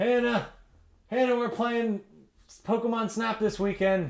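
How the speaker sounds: high, calling-out voice, carrying far.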